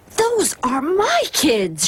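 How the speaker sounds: high, raspy, scratchy voice. Reading a story aloud, a teacher spotting her class: scratchy voice. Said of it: "she said in a scratchy voice".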